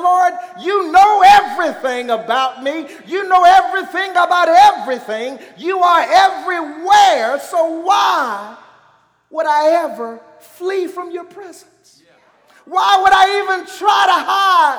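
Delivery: loud, high-pitched crying out. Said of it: "he's like".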